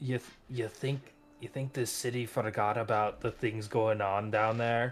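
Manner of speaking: hushed, confiding stage whisper under the breath. Speaking aside to the others while something is happening, half-whispering. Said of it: "I kind of whisper to them".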